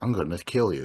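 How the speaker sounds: flat, deadpan, matter-of-fact delivery. Recounting a man's last words after Barb stands up to him: retelling a flat, deadpan threat. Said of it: "it's done flatly and as matter of factly".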